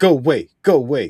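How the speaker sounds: loud shouting.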